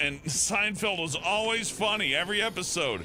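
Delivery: high-pitched, gushing, nostalgic fan voice.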